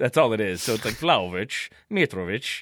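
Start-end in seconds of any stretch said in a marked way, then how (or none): 0.9-2.6 poor, clumsy put-on Dutch accent. Showing the accent another speaker asked for: bad dutch accent. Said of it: "in your Dutch accent".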